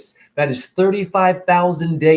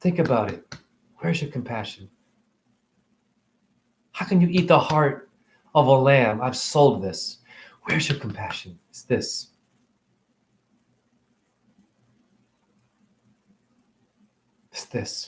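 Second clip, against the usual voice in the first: choked up with emotion, quieter; 3 semitones lower, 5 dB quieter than usual. Ranting about eating animals, asking where people's compassion is: getting emotional. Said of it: "I'm getting emotional".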